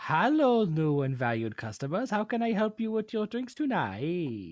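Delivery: put-on Middle Eastern accented speech. The narrator voices a man greeting new customers about their drinks: vague Middle Eastern accent. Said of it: "It's vaguely Middle Eastern".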